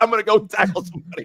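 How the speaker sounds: frustrated, seething, angry and fed-up. Imagining what Tchouaméni said after his yellow card: imitating Tchouaméni pissed off. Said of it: "he was just pissed".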